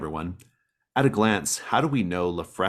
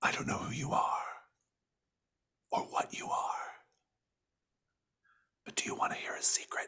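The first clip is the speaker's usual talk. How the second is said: soft, breathy whisper, barely audible; 6 semitones higher, 10 dB quieter than usual. Voicing a mysterious whisper that offers a player a secret: whispering voice. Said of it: "The whisper whispers to you".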